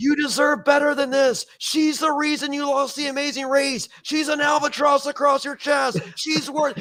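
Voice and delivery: acted shrill screaming at a very high pitch. Retelling screaming at a husband during a race challenge: imitating own screaming. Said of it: "I'm screaming at Jonathan".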